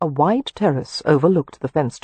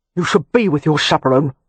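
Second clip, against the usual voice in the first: sharp, angry, snapping delivery; 3 dB louder than usual. Reading a novel aloud, a man answers a woman's dismissal: snapping angrily. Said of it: "Meripen snapped".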